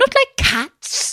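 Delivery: very high, shrill, impassioned outburst. Reading the Mouse's reply to Alice, in a shrill, passionate voice. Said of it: "in a shrill, passionate voice".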